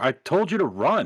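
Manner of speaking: urgent call-out in a character voice. Playing a character who yells at another character: yelling in character. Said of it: "I'm gonna yell at him".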